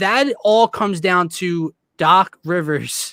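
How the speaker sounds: slow, drawn-out, emphatic delivery.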